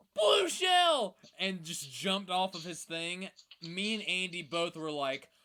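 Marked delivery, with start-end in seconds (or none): 0.2-1.2 shrill, very high, very loud panicked scream. Retelling a game moment with Andy, imitating Koopa's alarmed scream. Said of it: "that one Koopa just screamed".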